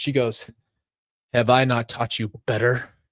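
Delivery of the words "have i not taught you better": mock-dramatic scolding tone, lower pitch. Retelling what a parent said to them, imitating a dramatic parent. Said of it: "so dramatic".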